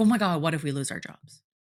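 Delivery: mock frantic fear and worry. Acting out how the anxious brain throws a worry at you, mock frantic fear. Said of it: "screams fear at you in a really frantic way".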